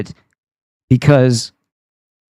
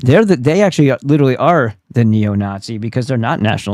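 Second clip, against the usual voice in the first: plain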